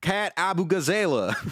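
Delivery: Southern-sounding pronunciation. Trying to pronounce a candidate's name, Southern-sounding pronunciation. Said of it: "I'm saying that shit southern as fuck".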